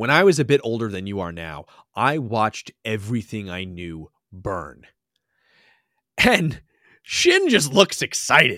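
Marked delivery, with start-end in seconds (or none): 0.0-4.8 earnest, solemn, grave, dead-serious storyteller delivery. Retelling a scene, playing an old character who gets super serious. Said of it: "he gets like super serious".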